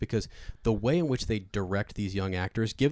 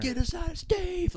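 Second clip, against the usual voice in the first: mock shrill, over-the-top, very high kid yelling. Describing a show scene where Dustin yells at Steve, imitating Dustin yelling. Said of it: "like he's just yelling".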